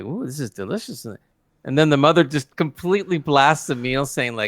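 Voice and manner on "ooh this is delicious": approving, praising tone. Retelling the father-in-law tasting the cooked food: imitating the father-in-law praising food. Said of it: "the father-in-law takes it, and he's going like".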